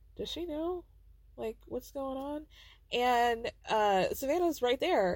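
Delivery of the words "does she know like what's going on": high, hushed, barely audible whisper. Retelling a woman asking a question in a tiny apartment: imitating someone whispering.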